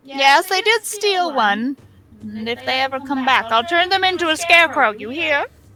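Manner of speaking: high-pitched storybook witch voice. Taking the witch's turn, speaking with Tammy: witch voice. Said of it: "it is the witch's turn".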